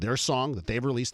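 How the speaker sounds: ordinary talk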